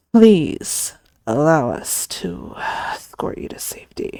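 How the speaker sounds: spoken tightly through clenched, gritted teeth. A narrator reads a man's words to the princess, through gritted teeth. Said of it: "Through gritted teeth he continued".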